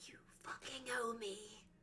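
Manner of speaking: whispering. Leaning in to another character and whispering a threat: whisper. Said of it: "lean in and whisper and go".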